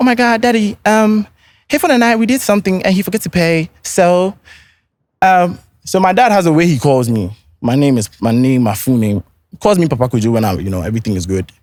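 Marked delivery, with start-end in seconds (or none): 0.0-3.7 teacher voice, pitched very high. Retelling what the educator said to the speaker's dad, imitating her educator's voice. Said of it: "in her educator's voice".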